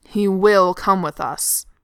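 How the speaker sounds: low, deep, very loud, slow growl. During the argument, the narrator voices Thorin's insistence: Thorin growling. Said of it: "Thorin growls".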